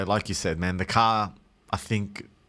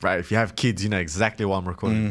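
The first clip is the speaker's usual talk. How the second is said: usual speaking voice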